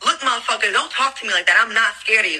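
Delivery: ordinary delivery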